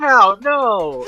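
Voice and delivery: loud, high yell. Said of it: "I yell".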